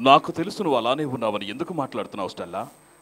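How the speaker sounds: English spoken like a Telugu dubbed movie. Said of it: "ఆ తెలుగు భాష ఎలా ఉంటుంది?".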